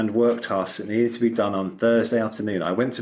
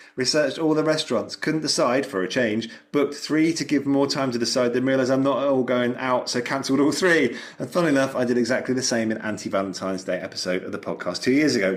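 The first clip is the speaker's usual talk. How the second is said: ordinary talk, nothing marked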